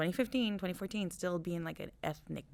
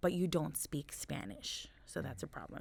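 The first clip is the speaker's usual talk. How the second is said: ordinary talk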